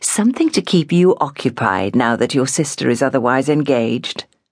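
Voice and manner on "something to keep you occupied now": usual speaking voice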